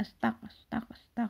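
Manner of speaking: whispered, mumbled, clipped, half-swallowed astag repeats. Describing astagfirullah said so fast it is unclear: very fast, clipped 'astag'. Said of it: "saking cepatnya itu sama kurang jelas kalau didengar ya, sepertinya astag astag astag gitu".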